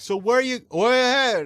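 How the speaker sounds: deaf-sounding speech. Retelling what a deaf woman said while ordering: imitating a deaf woman's speech. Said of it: "she's like".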